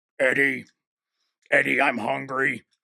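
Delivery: hungry, starving-sounding monster voice. Showing a toy with a chomping mouth, speaker does a Venom voice. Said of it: "I can hear the voice from the Venom movies like".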